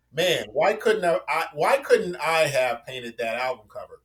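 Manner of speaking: normal talking voice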